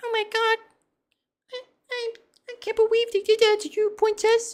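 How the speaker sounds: put-on very high, loud, babyish little-girl voice. Speaker mocks how girl VTubers comfort their viewers: girl VTuber baby voice. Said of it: "the girl VTubers with the baby voices".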